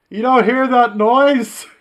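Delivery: shouting. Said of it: "Why are you shouting?".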